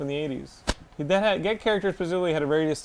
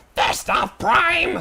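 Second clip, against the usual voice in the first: put-on robot villain voice, higher and louder; 8 semitones higher, 6 dB louder than usual. Recalling a cartoon villain's line in that voice: imitating Starscream's voice. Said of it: "Starscream have the voice who was like".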